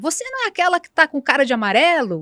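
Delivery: mild, called-out, put-on woman's shouting voice. Retelling how a woman beside the trafficker shouted from a distance, imitating a woman shouting. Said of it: "Ela começou a gritar".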